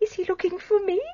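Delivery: crying, weeping, fighting through tears. Asked whether the man was the detective, answering: crying. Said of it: "Don't cry".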